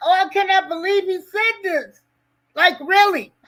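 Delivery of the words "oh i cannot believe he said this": high, weepy, tearful crying voice. Retelling own reaction to an interview: imitating own past crying. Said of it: "I'm crying like".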